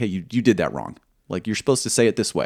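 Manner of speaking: ordinary talk, nothing marked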